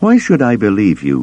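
pressing, insistent, hard, demanding. Mara finally answers Luke after he explains why he went to Vader: demanding. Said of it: "she demanded at last".

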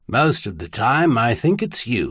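ordinary delivery

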